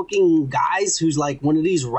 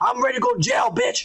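mock man yelling, higher. Retelling a fight video, imitating a man walking around: imitating a man yelling. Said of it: "walking around yelling".

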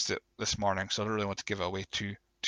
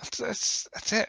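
emotional voice pitched way up. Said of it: "I'm actually feeling emotional".

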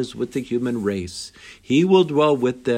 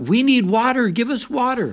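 mock furious outcry, very high-pitched; 11 semitones higher than usual. Retelling the stranded captain calling out a second time: imitating a furious cry. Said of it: "again furious, cried out".

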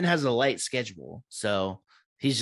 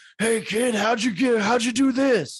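clumsy, squeaky, off-target put-on voice, very high; 12 semitones higher, 4 dB louder than usual. Imitating Steve Austin talking to Brock after a match: Steve Austin impression. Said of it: "the Steve Austin impression I did a little bit ago".

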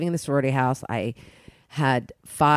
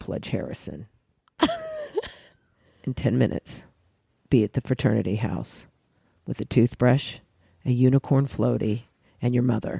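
lowered, swooping, fake manly voice; 3 semitones lower than usual. Retelling how she gave orders to a pledge, in a lowered fake manly voice. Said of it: "She was the one who did manly sometimes the best".

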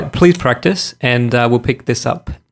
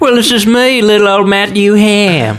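put-on Southern accent, higher and louder; 9 semitones higher, 5 dB louder than usual. Non-American speaker introducing himself as a character, put-on Southern accent. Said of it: "you're doing your Southern accent".

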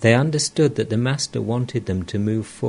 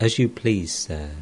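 ordinary delivery, nothing marked

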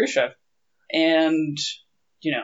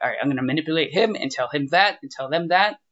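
plain

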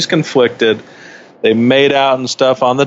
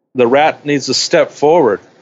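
ordinary delivery

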